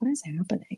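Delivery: quiet, hushed half-whispered stage whisper in character voice. Leaning over to another character during a play: half-whispering in character. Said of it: "I whisper what is happening to Thaddeus".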